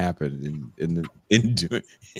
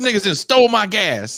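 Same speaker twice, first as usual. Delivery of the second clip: very high, shrill, acted screaming outburst; 6 dB louder than usual. Retelling a dad's angry reaction to stolen gas: imitating dad screaming. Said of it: "he's screaming and he's hollering".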